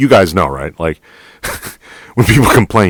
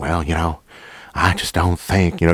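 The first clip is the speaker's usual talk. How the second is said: put-on, very country southern accent; 3 semitones higher, 5 dB quieter than usual. Retelling how a very country man used to talk, imitating a country Southern accent. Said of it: "he talked just like this".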